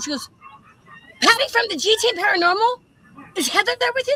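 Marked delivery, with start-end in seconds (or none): 1.2-4.2 put-on high, excited, eager tone. Retelling how the dispatch lady asked about the team: imitating someone excited. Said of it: "She got all excited".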